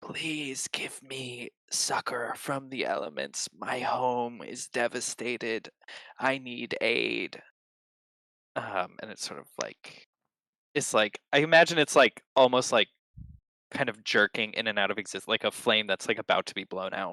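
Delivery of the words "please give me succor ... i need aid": quiet, crackling, smoky-sounding voice. Telling a story, a being reaches a group of people and pleads, crackling, smoky, quiet voice. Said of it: "in this crackling, smoky, um, quiet voice".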